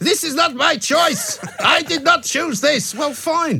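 very high, petulant outburst. Recounting a minister's press conference held outside, mock-petulant outburst. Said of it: "gave a rather petulant performance".

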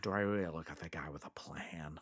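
whispered, low put-on character voice. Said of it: "The good thing about Joker quotes".

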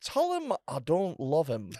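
Edinburgh pronunciation. Retelling a man's message for someone he knows, in a posh Edinburgh accent. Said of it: "it's an Edinburgh accent that was in the army".

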